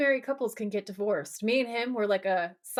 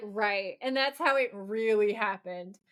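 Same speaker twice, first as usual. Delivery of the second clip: normal talking voice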